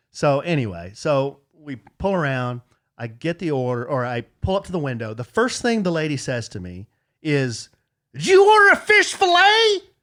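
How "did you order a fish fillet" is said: very loud, very high-pitched, shrill rising yell. Retelling what the lady at the window said: imitating someone yelling. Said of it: "Why'd she yell at you like that?".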